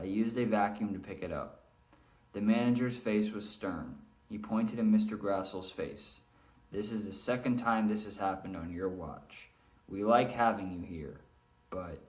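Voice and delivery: flat, droning, one-pitch monotone, on and on. Reading a story passage to show a boring delivery: monotone, droning. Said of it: "read in monotone, droning on and on, which is what I tried to just do".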